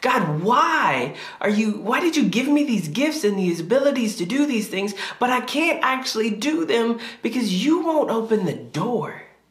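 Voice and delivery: angry yell. Retelling sitting in the car frustrated with god: retelling own yelling at god. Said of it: "I remember yelling at God".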